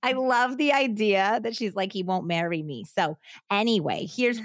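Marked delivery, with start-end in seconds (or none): 1.9-2.8 put-on Italian accent, scorned tone. Retelling what a scorned girlfriend told the police: put-on Italian accent. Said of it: "I can't do the accent".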